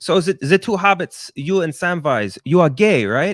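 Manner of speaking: fake, loud, high German accent. Retelling a prank call, imitating a fake German interviewer. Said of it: "pretended to be a German, uh, interviewer".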